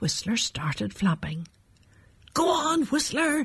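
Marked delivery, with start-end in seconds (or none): 2.3-3.5 high-pitched, encouraging, cheering shout. Robin shouts encouragingly to Whistler as he starts flapping. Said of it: "shouted Robin encouragingly".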